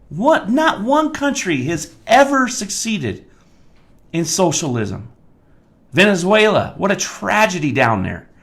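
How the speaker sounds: high-pitched, worked-up rant. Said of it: "I'm sorry I'm so worked up".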